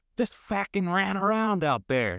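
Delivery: put-on very high, shrill, fumbled English accent. Quoting a famous soccer manager in England to a player, do a bad Harry Redknapp impression. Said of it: "I don't know what accent I just did".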